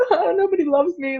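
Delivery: very high, put-on weepy wail, fake crying. Retelling being lost and blindfolded at Envision Festival, imitating own crying. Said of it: "just like crying under my blindfold".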